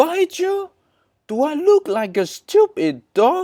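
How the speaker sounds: very high, loud, swooping silly goose voice. A goose answers the narrator who asked not to be bitten, in a goose voice. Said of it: "Sorry about the voice. That's how a goose speak in my head".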